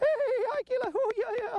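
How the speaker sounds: squeaky, high-pitched voice. Speaker demonstrates testing a dog by greeting it, high-pitched squeaky voice. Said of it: "getting the high-pitched, squeaky voices".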